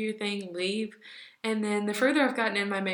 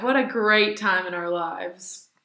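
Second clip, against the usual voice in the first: dripping, heavy sarcasm; 2 semitones lower, 6 dB louder than usual. Moving on to talk about dorm life: super sarcastic. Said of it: "I was being super sarcastic there".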